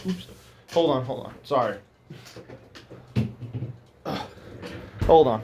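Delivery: hushed, breathy whispering between coughs, choking. Commenting on a technique, choking a little. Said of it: "I'm choking a little".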